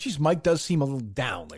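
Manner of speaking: plain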